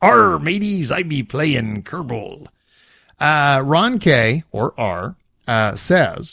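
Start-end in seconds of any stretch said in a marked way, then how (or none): 0.0-2.5 put-on seafaring pirate talk. Opening a letter signed only r, as a pirate: pirate voice. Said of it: "I like the pirate".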